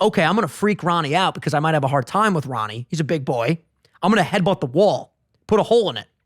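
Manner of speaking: ordinary talk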